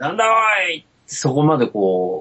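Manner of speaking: put-on middle-aged man voice. Speaker quoting how people who ate there might react, in a middle-aged man voice. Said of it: "なんかおっさんの声でしたね".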